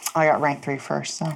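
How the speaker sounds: hushed sotto voce mutter under the breath. Playing a character, muttering a remark under the breath. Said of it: "I say under my breath".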